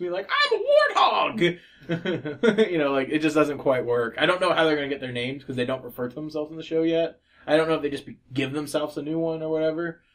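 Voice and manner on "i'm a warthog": very high, slow, squeaky cartoon warthog voice.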